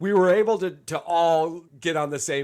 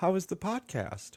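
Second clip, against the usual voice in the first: soft, hushed, gentle voice; 8 dB quieter than usual. Recalling how Rachel used to ask about the podcast: imitating Rachel's soft voice. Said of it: "I'd get this soft voice".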